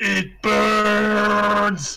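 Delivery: agonized screaming. Voicing a character waking in searing pain: agonized screaming in character. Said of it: "Endless screaming".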